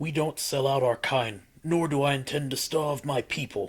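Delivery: steady, unyielding, firm and resolute delivery. The head elder answers the king's demands, firm. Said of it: "the head elder said. / the elder said firmly".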